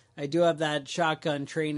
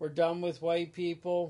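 plain

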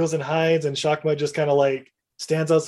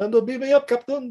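put-on Scottish accent, much higher; 8 semitones higher than usual. Recapping a story, a character does his best Scotty impersonation. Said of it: "he does his best Scotty impersonation".

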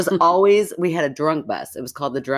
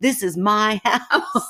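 mock drunk man yell, much higher; 6 semitones higher than usual. Telling a story about drunk Marvin fighting the cops, imitating Marvin's drunk yelling. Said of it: "he's yelling at the cops".

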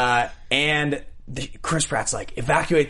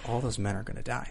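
put-on matter-of-fact delivery, spoken more quietly; 8 dB quieter than usual. Discussing how Chris Pratt would say the ending line: matter-of-fact Chris Pratt impression. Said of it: "he says it so matter-of-factly".

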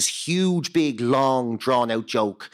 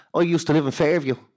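imitated half Dublin accent; 3 semitones higher than usual. Retelling what a man at a gig said: imitating a half Dublin accent. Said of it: "kind of a half Dublin accent".

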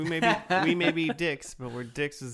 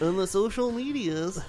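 silly, high-pitched put-on announcer voice; 5 semitones higher than usual. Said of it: "I'm talking in this voice".

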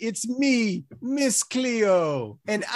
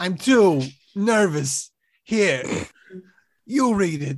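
put-on drunk actor voice; 3 semitones lower than usual. Announcing a winner in a sketch: drunken high Christopher Walken impression. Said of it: "a drunken high Christopher Walken".

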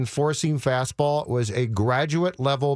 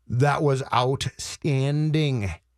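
very slow, deliberate delivery, every word laid out. Speaker praising a Fox Sports North broadcast he often criticizes, speaking very slowly. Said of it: "I will speak very slowly".

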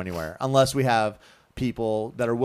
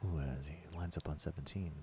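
slow, low, hushed golf broadcaster murmur; 6 semitones lower, 18 dB quieter than usual. Picking up a co-speaker's joke, doing a slow, low golf broadcaster voice. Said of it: "if I speak slow enough and low enough".

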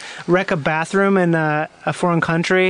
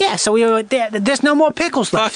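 put-on East Coast accent, higher pitch; 5 semitones higher than usual. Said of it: "you have kind of an East Coast accent".

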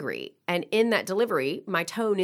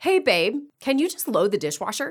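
slightly pitched-up voice with a bit of attitude; 5 semitones higher than usual. Giving an example of a straightforward request to a partner, with a bit of attitude. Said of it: "That's a little bit of an attitude".

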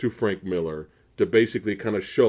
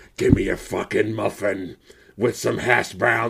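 hard-bitten tough-guy voice, rough, creaky and rasping. Imagining Frank Miller ordering at a drive-thru: Frank Miller impression. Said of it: "Miller looks like he sounds like that all the d-".

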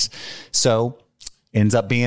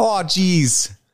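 put-on Canadian accent, pitched up; 7 semitones higher than usual. Doing a Canadian impression after joking about Mounties: Canadian accent impression. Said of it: "That was my Canadian impression".

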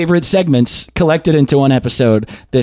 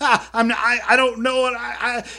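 mock nervous shaky voice, higher and quieter; 7 semitones higher, 8 dB quieter than usual. Retelling answering a man who insists you're a cop, imitating own nervous shaking voice. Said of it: "I started shaking".

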